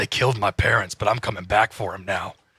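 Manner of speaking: deep, husky vigilante voice, dropped low. Joking about a husky voice, doing a Batman voice. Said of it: "get my Batman voice out".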